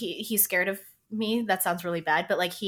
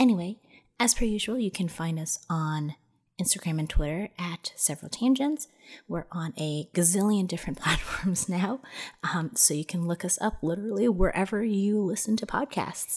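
hushed, soft whisper. Podcast host closes the episode past midnight, whispering. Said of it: "I'm whispering because it's currently past midnight".

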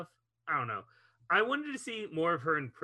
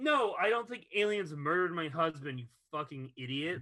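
ordinary delivery

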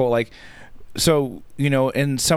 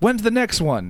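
eager high-pitched shout; 8 semitones higher than usual. Retelling how a guy yelled out during his little speech, retelling a yell. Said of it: "And he yells out".

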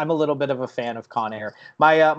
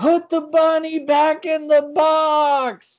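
very high, slow yell, "box" stretched long; 14 semitones higher, 4 dB louder than usual. In a silent audience, speaker retells yelling out a movie quote: retelling a yell. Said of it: "I yelled out".

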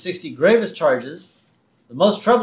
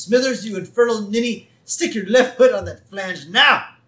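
mock voice, raised and pitched up, commanding; 5 semitones higher than usual. Retelling how Burns orders Smithers around, imitating Mr. Burns raising his voice. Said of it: "he raises his voice and says".

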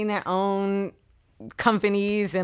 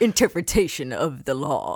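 deep, swooping, maniacal audiobook narrator voice; 5 semitones lower than usual. Imitating the audiobook narrator after being asked to do the impression: imitating a maniacal audiobook narrator. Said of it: "you gotta do your impression".

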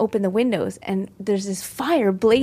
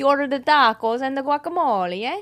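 laid-on, put-on Italian-accented English; 4 semitones higher than usual. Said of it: "now I turned Italian".

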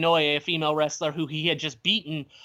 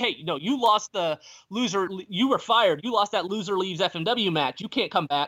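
mock riled-up, taunting, yelling rant; 3 semitones higher than usual. Retelling a wrestler confronting another who was fired: imitating someone yelling. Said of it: "starts yelling".

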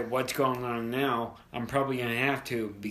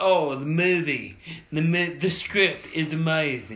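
put-on loud, slow, drawling English accent; 4 semitones higher, 5 dB louder than usual. Imitating an actor praising a delayed movie's script: imitating Tom Holland's English accent. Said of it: "my best English impersonation ever".

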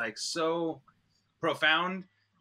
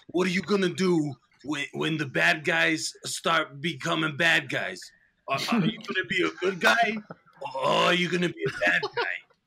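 put-on actor's voice, like a film trailer; 4 dB louder than usual. Quoting a favorite trailer moment with Whitaker talking to a woman: Forest Whitaker impression. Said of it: "I got an impression of Forrest Whitaker".

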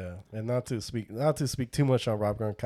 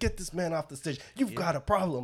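mock fed-up anger with raised pitch; 7 semitones higher than usual. Retelling how an angry man demanded a football player leave the stage: imitating someone genuinely pissed. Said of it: "You could tell he was genuinely pissed".

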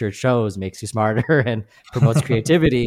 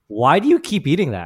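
mock judgmental, critical, disapproving tone; 4 semitones higher than usual. Retelling people questioning the speaker's food, mimicking a judgmental, critical tone. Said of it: "in this judgmental, critical way".

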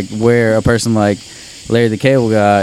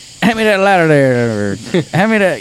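extra-thick, exaggerated put-on country accent, high and swooping; 7 semitones higher than usual. Speaker shows how they sound saying ordinary things: exaggerated country accent. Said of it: "putting on an even more country accent".

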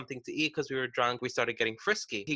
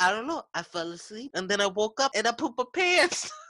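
put-on baby voice, pitched higher; 9 semitones higher, 3 dB louder than usual. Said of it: "he used to do this baby voice".

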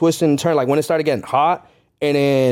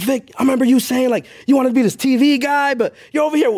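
much higher-pitched, heated scolding tone. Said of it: "I was talking to myself".

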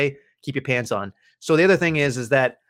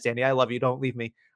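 ordinary talk

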